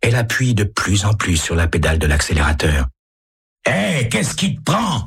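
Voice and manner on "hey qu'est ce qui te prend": very high, exclaiming outcry. As the driver keeps speeding up, a man in the car cries out at her. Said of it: "S'écrie l'homme".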